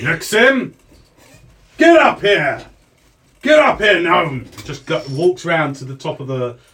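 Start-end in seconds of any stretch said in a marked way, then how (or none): 0.0-4.5 shouting, higher, louder, slower. Narrating a scene to listeners, the speaker voices a man calling them upstairs, shouting.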